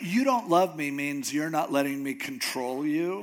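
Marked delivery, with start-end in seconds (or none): 0.0-0.9 "don't" said loud with hard stress. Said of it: "you know how, you know".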